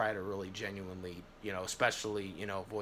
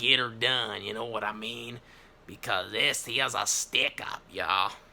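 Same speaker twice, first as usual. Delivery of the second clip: sounding like a cowboy; 2 semitones higher, 8 dB louder than usual. Asking listeners to send referrals, cowboy voice. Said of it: "sounding like a cowboy".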